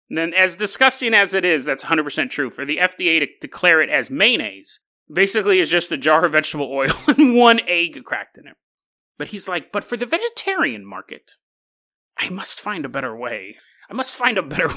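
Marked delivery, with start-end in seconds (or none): 9.7-14.7 soft, quiet, scheming villain voice with swooping pitch. Quoting a man's words, in a Riddler voice. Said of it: "he sounds like the Riddler trying to figure out a plan".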